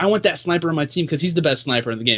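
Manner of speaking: normal talking voice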